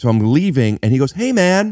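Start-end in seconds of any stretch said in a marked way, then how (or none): 1.1-1.7 high, chummy, overfamiliar tone. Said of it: "with an energy of he".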